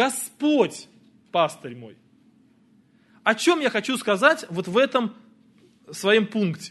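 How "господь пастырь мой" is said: logical emphasis placed on Господь. A psalm line with the logical stress placed: stress on Господь. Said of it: "поставим логическое ударение на слово «Господь»".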